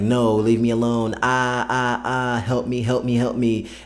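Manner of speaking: tearful, slow, crying, pleading voice. Retelling a vampire story, acting out a victim dragged from her bedroom, imitating someone crying. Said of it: "you're crying like".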